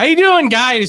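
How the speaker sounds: put-on high, loud shouting. Retelling how a friend greeted them while they were hungover: imitating someone shouting. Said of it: "shouting in my face".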